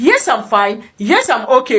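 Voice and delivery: ordinary talk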